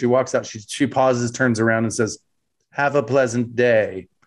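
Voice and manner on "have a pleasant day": put-on very dry delivery. Retelling how the character said her parting line: imitating Seven of Nine, very dry. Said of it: "very dry".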